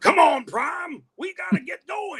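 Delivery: very high, loud, belted, rowdy robot voice. Showing how you would do Ironhide speaking to Prime, in a rowdy Ironhide voice. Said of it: "So I would do an Ironhide".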